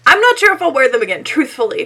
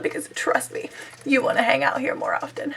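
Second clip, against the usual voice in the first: soft, breathy, mock-sultry whisper. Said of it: "Is that my thing now?".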